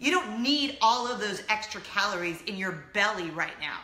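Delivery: thoroughly disgusted tone. Retelling a man's remark after a meal, mimicking his disgust. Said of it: "Total disgust in his voice".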